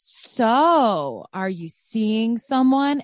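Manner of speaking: put-on very slow, high, nosy, prying tone. Retelling the question the mom always asked: imitating mom's prying tone. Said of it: "something about that tone of voice".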